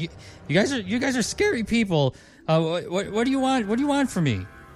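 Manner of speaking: frightened, fearful character voice. Voicing a nervous character facing scary visitors: nervous NPC voice. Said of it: "he's still kind of nervous".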